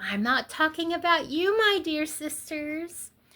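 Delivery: high, syrupy, honeyed, sugary-sweet voice. Retelling how a preacher turned to the women: imitating a sugary sweet voice. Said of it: "say in this really sugary, sweet voice".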